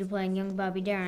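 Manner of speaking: normal talking voice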